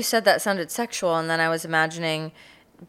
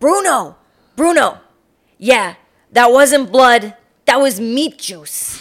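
loud, brusque, curt, pitched-up voice; 6 semitones higher, 8 dB louder than usual. Retelling what a brusque coworker told someone: imitating Cindy, brusque. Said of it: "kind of brusque Cindy energy".

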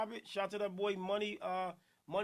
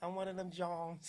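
exaggerated put-on heavy Philly accent, quieter; 3 semitones lower, 5 dB quieter than usual. Retelling what a woman said to him: imitating an exaggerated heavy philly accent. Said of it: "She started trying to be extra with it".

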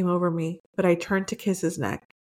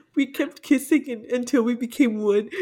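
high-pitched, giggling, laughing while reading aloud; 5 semitones higher than usual. Reading a story aloud to another listener, laughing while reading. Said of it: "I can't read this without laughing".

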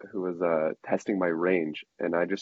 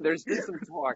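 put-on very high, little old lady voice; 10 semitones higher, 4 dB quieter than usual. Teased by the others, speaker offers a better one: old lady voice impression. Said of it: "it's your old lady".

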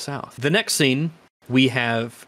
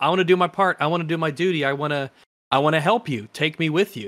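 put-on pleading voice; 4 semitones higher than usual. Retelling how a man begs Doc and the captain as they walk away, imitating begging. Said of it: "he's begging them".

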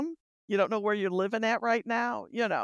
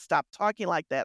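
usual speaking voice

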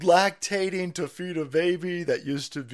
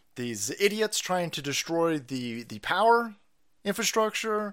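ordinary delivery

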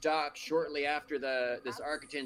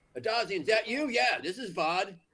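raised, pitched-up half-yelling voice; 7 semitones higher, 5 dB louder than usual. A player's character runs up to an ally and calls into his fist, kind of yelling into a comlink. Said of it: "kind of yells at his Buck's fist".

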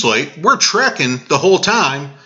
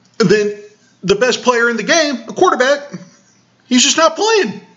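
worked up, increasingly agitated voice climbing high; 7 semitones higher than usual. A show host talking about a surprise loss, getting worked up, voice rising high. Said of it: "My voice is getting high because I'm getting worked up".

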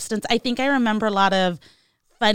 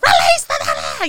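put-on, shrill shout at full volume; 8 semitones higher, 3 dB louder than usual. Retelling what Frau from Austin Powers yelled, imitating Frau shouting loudly. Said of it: "as loud as she could".

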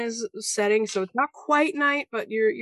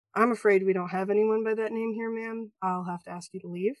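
flat, fast, expressionless stone-faced deadpan. A character turns away a woman searching for her missing girl, stone-faced. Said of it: "go stone face and say".

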